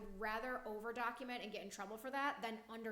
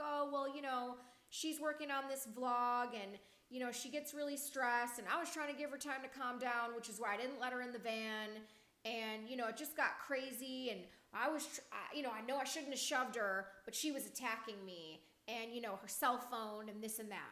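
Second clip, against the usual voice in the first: plain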